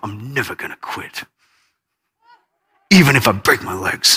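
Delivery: very low, determined mutter, under breath. Retelling a son's words after falling off a bike: imitating a child muttering to himself. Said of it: "he just mutters to himself".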